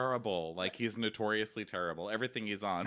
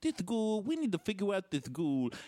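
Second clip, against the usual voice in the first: mimicked cartoonish voice, higher pitch; 10 semitones higher than usual. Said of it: "It's like a cartoon voice".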